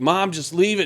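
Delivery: high, loud, upset, pleading shout. Describing a movie scene, the speaker acts out a character yelling at his mom, retelling a yell. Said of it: "when Robbie is yelling".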